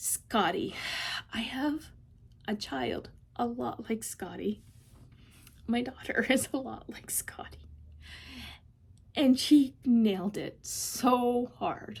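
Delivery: voice catching, choking up, fighting tears. Describing a novella character much like their own daughter, choking up. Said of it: "And I'm not going to succeed".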